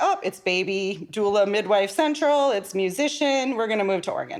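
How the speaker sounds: usual speaking voice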